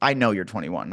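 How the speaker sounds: rude, dismissive, put-down tone. Retelling what a server said when refusing a drink: imitating a rude waiter. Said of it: "kinda said it rudely".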